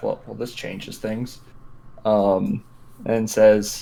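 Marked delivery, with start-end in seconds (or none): 0.0-1.4 muttered under breath, much quieter. Narrator voicing a character reacting to a report, muttering under his breath. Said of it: "he he mutters under his breath".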